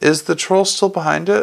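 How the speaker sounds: ordinary delivery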